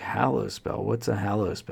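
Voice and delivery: plain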